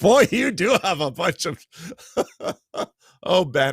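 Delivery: high voice, words broken up by laughter. Responding to what ben wrote in, laughing while talking. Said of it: "I'm sorry I'm laughing".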